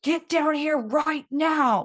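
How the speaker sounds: loud, high-pitched screaming. Retelling a man who came down the path screaming at her, imitating someone screaming. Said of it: "I'm getting screamed at".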